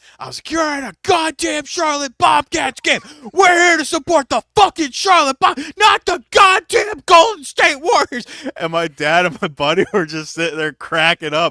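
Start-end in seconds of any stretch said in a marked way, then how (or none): 0.5-8.3 very high, loud, shrill, furious screaming rant. At a Charlotte Bobcats game, recalling screaming at Warriors fans, imitating own screaming. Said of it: "I just started screaming at everyone".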